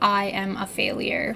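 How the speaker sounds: ordinary talk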